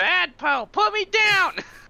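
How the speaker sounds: very high, squeaky, tiny little scream. Picked up by someone, yelling to be put down, screaming in a tiny voice. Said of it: "screaming in tiny voice".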